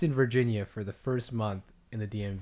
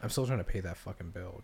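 offhand, nonchalant, sarcastic throwaway delivery; 4 semitones lower, 6 dB quieter than usual. Telling another speaker about a hospital bill: nonchalant, sarcastic. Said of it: "nonchalant, kind of sarcastic".

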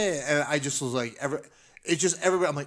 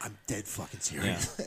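deep, low, hushed, menacing whisper; 7 semitones lower, 8 dB quieter than usual. Retelling escorting a guy out, the speaker repeats what they whispered to him: retelling a whisper. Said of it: "And I whispered".

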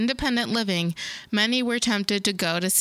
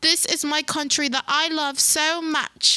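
put-on English politician's accent, pitched up, heartfelt; 7 semitones higher than usual. Repeating the quote when asked to do it again: Theresa May accent. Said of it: "Do it again, do it again".

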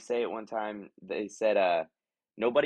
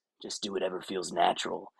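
low, gravelly put-on voice, even lower; 3 semitones lower than usual. Retelling the answer given to a question about a character: low gravelly Clint Eastwood voice. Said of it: "kind of low and gra-, gravelly his voice is".

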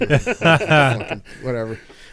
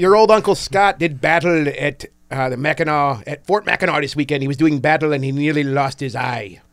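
talking like a pirate. Talking to the group before someone asks when he turned pirate; pirate voice. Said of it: "When when did you turn into a pirate?".

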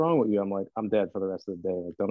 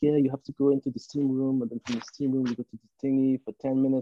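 put-on European accent; 4 semitones higher than usual. Retelling what a European gym trainer told the speaker, in his European accent. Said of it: "he's got this accent".

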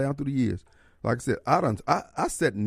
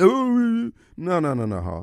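fake stammering, higher pitched; 5 semitones higher, 3 dB louder than usual. Acting out a reply the speaker says they will never give: mock stuttering. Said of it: "You ain't gonna hear me stuttering".

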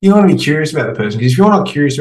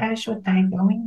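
mock baby talk, much higher and quieter; 9 semitones higher, 9 dB quieter than usual. Retelling a date who talked to him like a baby: imitating her baby talk. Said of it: "Like a full-on baby to me".

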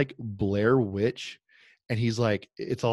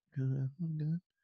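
higher, quieter put-on shy kid voice; 4 semitones higher, 10 dB quieter than usual. Retelling a shy kid's answer to a mall Santa: imitating a shy kid speaking quietly. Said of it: "says it really quiet".

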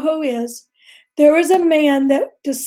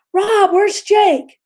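put-on holler, much higher; 6 semitones higher than usual. Retelling calling out to someone forty yards away, retelling a holler. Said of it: "I hollered".

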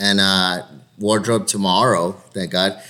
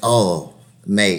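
put-on Irish or English accent. Retelling what the second AD said: imitating an Irish or English accent. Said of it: "definitely an accent".

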